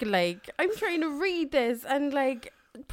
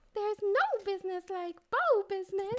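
dainty, soft, little cartoon mouse voice; 4 semitones higher, 7 dB quieter than usual. Praised for doing a good Minnie Mouse, the speaker repeats the line; Minnie Mouse voice. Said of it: "You can actually do a good mini moose".

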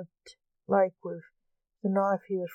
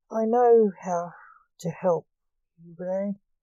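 ordinary delivery, nothing marked

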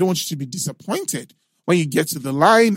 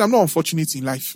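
ordinary delivery

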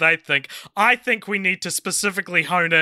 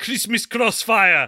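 put-on German accent, higher; 3 semitones higher than usual. Naming a film title after being asked to: german accent. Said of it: "say it in a German accent".

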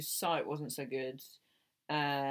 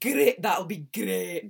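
booming, very loud, belted put-on Scottish accent; 4 semitones higher, 9 dB louder than usual. Showing what can be said in the accent: Lorraine impression. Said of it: "you're doing your Lorraine impression".

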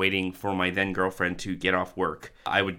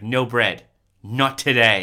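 acted, totally serious child's inflection, loud and slow; 4 semitones higher, 8 dB louder than usual. Retelling a child refusing to buy bread: imitating a child's totally serious tone. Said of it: "the totally serious inflection".

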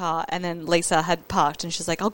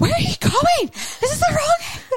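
yell done much higher and louder; 5 dB louder than usual. Recounting a ride where he took a different way, retelling a yell at him. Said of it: "Sorry for yelling".

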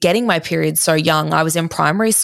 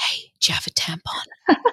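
slow, hushed whisper under the breath; 6 dB quieter than usual. Retelling asking one of the girls at work for a tampon: retelling a whisper. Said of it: "And I whispered it".

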